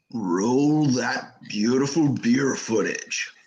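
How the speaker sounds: very deep voice at lowest possible register. Saying a line another speaker requested, in the deepest voice. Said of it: "can you say in your deepest voice".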